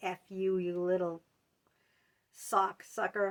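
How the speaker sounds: ordinary delivery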